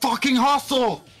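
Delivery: very high, loud screeching scream. Picturing self at her little game in the stands, imagined screaming from the stands. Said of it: "Picture me screaming at her from the stands".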